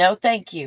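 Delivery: firm, no-room-for-debate tone. Retelling own refusal to a man: retelling a firm refusal. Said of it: "really firm".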